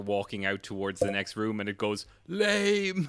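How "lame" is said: very high, stretched, drawn-out whispered shout. Voicing a figure calling after players walking away: whispered shout. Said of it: "the same whispered shout comes back at you".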